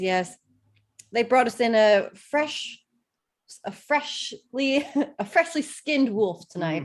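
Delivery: put-on faint touch of Scottish accent. Voicing an innkeeper asking what the guests want: slight Scottish accent. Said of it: "She's, like, Scottish now".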